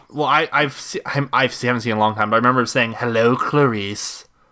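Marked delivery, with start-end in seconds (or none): 3.0-4.3 put-on creepy villain voice. Quoting a remembered movie line, creepy Hannibal Lecter voice. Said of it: "real fucking creepy".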